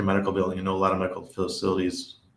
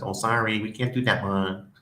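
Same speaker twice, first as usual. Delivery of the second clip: put-on Chinese accent. Retelling what the lady at the key-cutting place said, imitating a Chinese accent. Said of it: "Sorry, I'm doing the accent".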